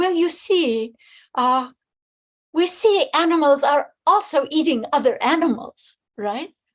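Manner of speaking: put-on lofty French accent. Quoting a really quite arrogant cardinal, speak as Cardinal Daniélou with his French accent. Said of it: "he says with his French accent".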